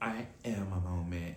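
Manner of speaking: mock soft, slow, calm, chill, menacing voice. Retelling how Kenya answered during an argument; retelling Kenya's calm, menacing line. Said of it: "All in this like calm, chill, menacing voice".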